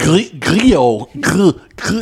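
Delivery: put-on French accent. Trying to say the actor's name: put-on French accent. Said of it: "that's difficult to say in a French accent".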